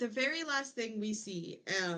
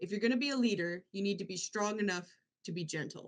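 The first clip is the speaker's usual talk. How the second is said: put-on, very serious delivery. Retelling what a brother told the actor: imitating someone saying it very seriously. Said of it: "his brother says very seriously".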